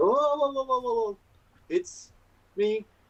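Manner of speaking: very high, soothing, placating tone. Voicing a character calming two angry dragons: Vaishal calming dragons. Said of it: "Vaishal just sort of goes".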